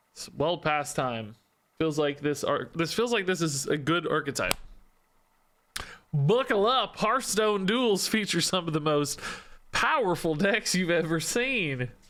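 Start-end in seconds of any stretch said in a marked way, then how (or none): 6.1-11.8 high, fake, put-on southern cowboy accent. Streamer talking to stream viewers about a deck, in a put-on southern accent. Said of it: "I need to start doing my southern voice".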